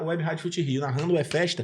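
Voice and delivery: ordinary talk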